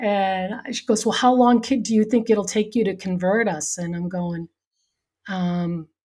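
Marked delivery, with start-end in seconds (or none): 1.1-3.8 mock frantic, rushed, panicky. Retelling a question from a finance manager after a computer crash: imitating someone freaking out. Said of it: "she's, like, freaking out".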